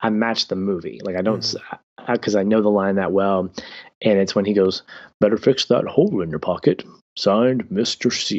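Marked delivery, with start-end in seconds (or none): 5.2-8.4 overdone, jolly voice, laid on thick. Quoting a line from the movie, Santa Claus voice. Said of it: "I drop into that Santa Claus voice".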